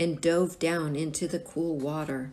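ordinary delivery

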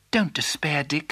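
plain

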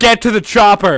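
put-on plain voice, yelled like a movie order. Retelling how someone did his impression, as a yelled Arnold impression. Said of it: "But he yelled it".

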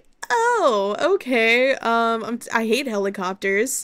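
plain

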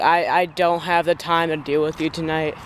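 ordinary delivery

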